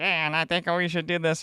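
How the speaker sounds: slick Italian man's voice. Mocking the other guy who comes on, imitating the other guy's voice. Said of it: "That's his exact voice".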